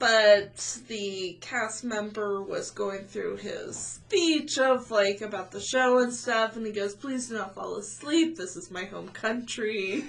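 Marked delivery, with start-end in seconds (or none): 6.9-10.0 put-on mournful, flat, sad French accent. Retelling a cast member's show speech, imitating a sad french accent. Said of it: "he's got that like sad French accent".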